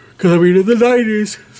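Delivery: very high speech stretched through a yawn. Talking about the Goosebumps series and the nineties, yawning while talking. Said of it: "sorry for my yawning".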